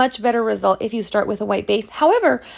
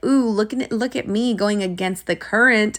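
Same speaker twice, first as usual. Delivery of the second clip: plain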